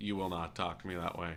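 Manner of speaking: put-on soft, flat, level, even-toned monotone. Speaker retells answering a threatening man at their shop; retelling a monotone reply. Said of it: "I'm just monotone".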